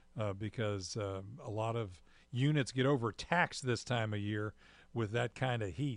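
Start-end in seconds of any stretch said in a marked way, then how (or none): none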